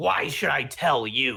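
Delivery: scornful, sneering little goblin-like creature voice. As a tied-up goblin answering the player, sneering. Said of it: "it gives you a little sneer and says".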